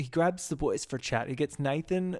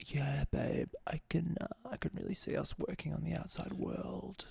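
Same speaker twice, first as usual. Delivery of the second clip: put-on gentle, soft, creaky grown-man baby talk; 2 semitones higher, 8 dB quieter than usual. Imitating Joe speaking to a partner: Joe's soft man-baby voice. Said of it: "it's like soft baby voice".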